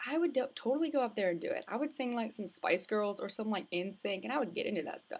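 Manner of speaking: ordinary talk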